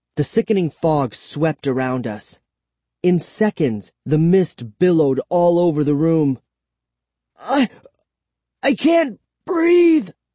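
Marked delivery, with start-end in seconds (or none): 7.4-10.1 very high, breathless, gasped cry. Caught in a stinking fog, the narrator cries out, gasping. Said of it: "I gasped".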